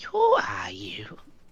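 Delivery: eerie, creepy, very high-pitched voice. Game narrator voicing a figure in disguise, asking in a creepy tone. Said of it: "In like a creepy tone".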